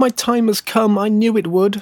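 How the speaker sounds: joyful outcry, pitched way up. A fir tree chosen to be cut down for christmas cries out happily. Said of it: "cried the tree happily".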